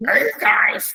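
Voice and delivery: put-on croaky frog voice. Trying out a frog voice and failing: croaky frog voice, like Fozzie Bear. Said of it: "That frog voice".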